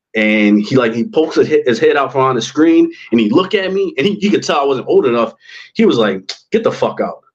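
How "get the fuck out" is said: mock straight, no-nonsense, blunt, curt delivery. Retelling being told to get out: imitating a blunt order. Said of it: "straight like that to my face".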